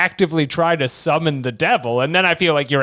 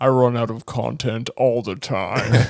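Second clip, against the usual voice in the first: put-on devil voice, lower pitch; 6 semitones lower, 3 dB quieter than usual. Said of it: "I like your devil voice".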